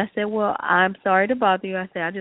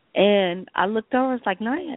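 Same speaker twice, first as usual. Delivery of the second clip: ordinary delivery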